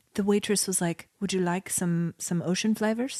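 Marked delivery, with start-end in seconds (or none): 1.2-3.2 put-on Croatian-accented speech. Retelling what a waitress said at a seaside cafe in Croatia, Croatian accent impression. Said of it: "Is that your Croatian".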